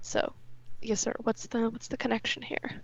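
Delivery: low, hushed voice, nearly a whisper. Keeping the voice down so they can't hear: quiet, kept low. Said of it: "I'm gonna kind of lower my voice".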